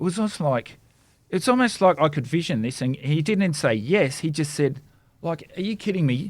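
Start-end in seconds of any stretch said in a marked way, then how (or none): 5.6-6.3 pitched-up put-on voice loaded with attitude. Acting out the man's reply to Jesus: imitating someone with an attitude. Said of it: "with an attitude".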